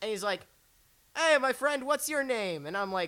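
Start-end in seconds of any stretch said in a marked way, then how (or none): 1.2-2.7 halting, high, loud broken English. Retelling meeting Julio, who barely spoke English: imitating Julio's broken English. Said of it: "he barely spoke English".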